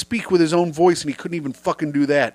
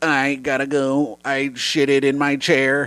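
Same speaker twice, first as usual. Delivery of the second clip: slow, flat, droning robot voice; 4 semitones lower than usual. Joking about dinner with Stephen Hawking: Stephen Hawking robot voice. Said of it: "Stephen Hawking, and he's like".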